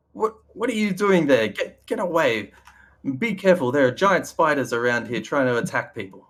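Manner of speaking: calling out, kept mild. Voicing a man who reappears from below, warning of spiders: yelling out. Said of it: "yells out to you".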